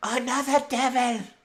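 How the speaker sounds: very high, loud, shrieking scream. Voicing a woman character in the game scene: screaming. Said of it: "as she's screaming".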